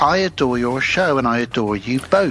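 ordinary talk, nothing marked

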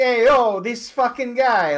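put-on New York accent. Showing how a New Yorker sounds, as opposed to Boston: put-on New York accent. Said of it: "it's like that New Yorker, like, ... like that".

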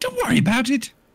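put-on woman's voice. Voicing a woman character in a game, just woken up: Stewie Griffin voice. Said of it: "can't do a woman's voice without doing Stewie".

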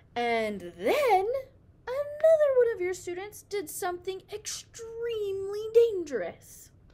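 sudden, abrupt, very high, very loud, shrill outburst. Mrs. Wright tells Mrs. Brisbane about one of her students, suddenly loud. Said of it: "Mrs. Wright's voice was suddenly loud again".

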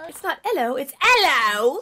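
British pronunciation. Friends trying out a uk hello, one corrects the others, demonstrating a british accent. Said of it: "That's not how it sounds".

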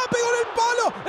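excited, eager delivery.

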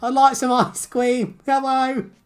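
put-on very high little cockney child voice. Asked if they sounded like a baby, the speaker does a cockney child voice. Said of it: "cockney child?".

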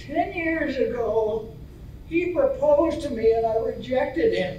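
normal talking voice

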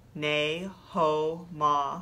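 very slow, drawn-out delivery.

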